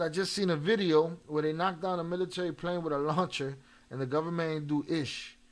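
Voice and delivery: ordinary delivery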